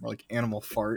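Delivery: put-on muttering under breath. Acting out a kid at the back of class: imitating someone muttering under breath. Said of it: "and under his breath".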